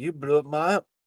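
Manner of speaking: put-on South African accent, casual delivery. Retelling what he said to the speaker every Sunday, in a South African accent. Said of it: "he gave that accent because our former worship pastor was from South Africa".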